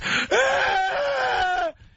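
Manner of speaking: put-on high, shrieking child's scream. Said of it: "and I'm just".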